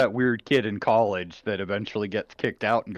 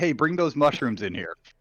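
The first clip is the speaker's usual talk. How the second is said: called out, easy and offhand; 4 semitones higher than usual. Describing kitchen noises, the speaker acts out Pan's call: retelling Pan's yell. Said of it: "Pan yelling out".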